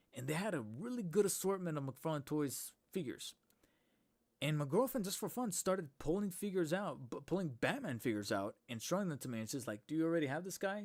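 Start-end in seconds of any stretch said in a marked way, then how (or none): 9.8-10.8 dry, mocking, sarcastic and teasing tone. Retelling a girlfriend's question in a comic book shop: imitating a sarcastic question. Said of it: "she was mostly being sarcastic".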